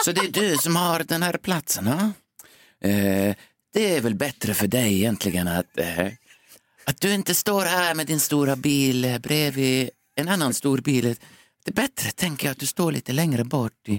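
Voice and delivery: put-on faint Finnish accent while speaking Swedish. Retelling what an old man told him, with a slight Finnish accent. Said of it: "Han har en lätt finsk brytning".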